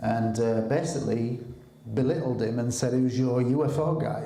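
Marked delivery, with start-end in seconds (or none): none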